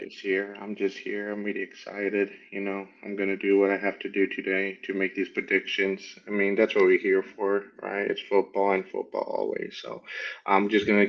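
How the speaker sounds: low flat voice. Opening a sports podcast, the co-host answers how he's doing: monotone Bill Belichick impression. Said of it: "Coming through with the monotone Bill Belichick".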